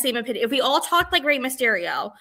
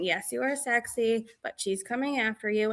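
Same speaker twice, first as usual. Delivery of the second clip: flat monotone dubbed voice, all one tone; 7 dB quieter than usual. Imitating Rey Mysterio dubbing over the women talking: Rey Mysterio monotone voice. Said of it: "Rey Mysterio's monotone voice saying".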